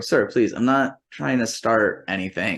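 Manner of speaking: put-on, careful, courteous, polite, disbelieving pleading tone. Retelling a tense talk at a hotel desk: imitating own polite plea. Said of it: "this is exactly how I say".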